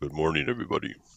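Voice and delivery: deep just-woke-up voice.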